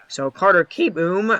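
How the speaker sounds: voice cracking and breaking mid-phrase. Calling a baseball game, the speaker names the next batter, voice cracking. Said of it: "sorry about the voice crack there".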